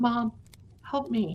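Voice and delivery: plaintive, pleading voice. Retelling a haunting where a voice calls from out front: imitating daughter's voice. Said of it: "I have my daughter's voice out front".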